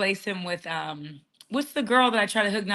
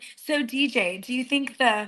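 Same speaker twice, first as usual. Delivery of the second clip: youthful voice, very slow and drawn out; 4 semitones higher than usual. Imitating how a young girl who was on with them talks: imitating Ann. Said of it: "She talks like this".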